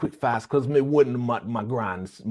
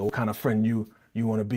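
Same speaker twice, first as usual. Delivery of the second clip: fake Jamaican accent, faster. Retelling a man's reply in a conversation, in a fake Jamaican accent. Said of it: "fake Jamaican accent".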